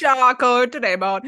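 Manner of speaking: unintended Indian accent slipping into speech. Describing a meat and olive platter, the speaker slips into an Indian accent. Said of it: "I don't know why I'm sounding Indian".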